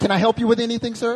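high, loud mock clerk voice.

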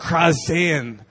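harsh, angry crying out. Explaining a Greek word for crying out, demonstrate it: angry harsh cry out. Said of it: "Like I'm angry and I'm gonna cry out".

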